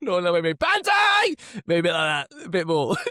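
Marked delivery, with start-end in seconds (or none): 0.3-1.4 loud battle-cry scream, much higher and louder. Speaker demonstrates the banzai charge for listeners: a screamed battle cry. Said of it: "sorry for your ears".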